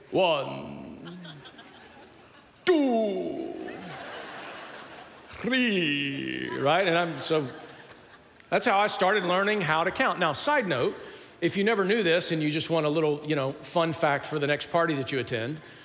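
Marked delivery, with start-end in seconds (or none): 0.1-6.5 put-on Romanian-accented vampire voice. Recalling learning to count in English, counting in the Count's Romanian accent. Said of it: "very good with a Romanian accent because the count would count".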